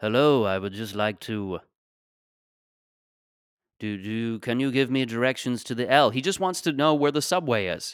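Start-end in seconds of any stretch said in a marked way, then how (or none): 0.0-6.1 put-on old English gentleman's voice. Improvising Obi-Wan Kenobi asking for subway directions: Obi-Wan Kenobi voice. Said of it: "It's just Obi-Wan Kenobi".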